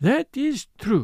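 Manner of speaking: deflated, let-down. Poirot answers the other speaker, in a crestfallen murmur. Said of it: "murmured Poirot, with a rather crestfallen air".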